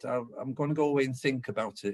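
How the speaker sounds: plain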